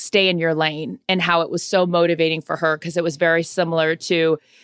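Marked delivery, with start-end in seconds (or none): none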